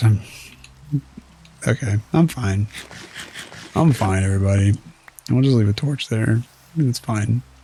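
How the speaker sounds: a bit rattled and shaken, forcing a calm tone. Reassuring everybody after a spider scare, sounding slightly traumatized. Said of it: "I sound traumatized slightly".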